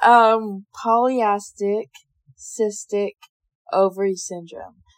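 very slow, deliberate, every word drawn out. Speaker saying a term for listeners who may not know it, very slow. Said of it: "you're going to say it very slow".

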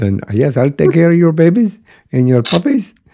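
put-on German accent. Describing a favorite movie scene with the neighbor, in a thick German accent. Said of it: "He's a German, thick accent".

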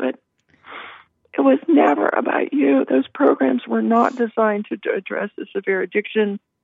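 choked-up voice on the edge of crying. Speaking to listeners, admitting they're about to start crying: about to cry. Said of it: "I'm going to start crying".

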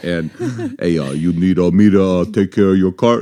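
put-on macho, manly voice. Asked during a sound check for a good manly accent, manly accent. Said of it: "Can you just do a good manly accent?".

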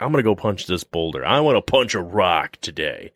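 ordinary talk

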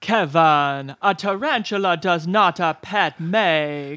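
slow theatrical reading, each word savoured, "make" stretched. Giving a line reading about Kevin's pet tarantula, Moira Rose voice. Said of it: "a Moira Rose line reading".

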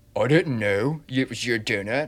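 put-on, slow Southern California surfer-bro kid drawl. Imitating a kid's excuse about eating the donut: imitating kid as Southern California surfer. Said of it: "your kid voice is like a s-, a Southern California surfer, bro".

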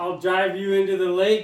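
shouting. Threatening another player's character in a role-play scene: yelling in character. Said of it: "And we're yelling outside the house".

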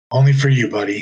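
ordinary talk, nothing marked

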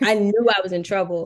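ordinary talk, nothing marked

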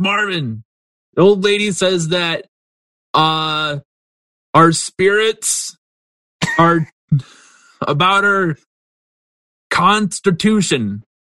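high, loud calling out. Voicing a man relaying an old woman's words to someone in back, yelling back. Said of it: "He yells back".

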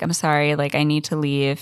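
plain

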